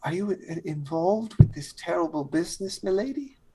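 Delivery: speaking a little quietly. Leaning in to question a lady, speaking a little quietly. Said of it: "kind of leans in and starts speaking a little quiet".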